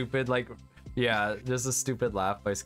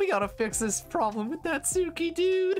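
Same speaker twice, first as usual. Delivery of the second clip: put-on cartoon slacker voice. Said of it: "like Yuri, man".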